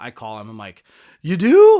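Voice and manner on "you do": mock clingy, shrill, very high and loud. Retelling a phone call after a friend praised the songs: imitating own needy tone. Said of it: "totally, like, needy".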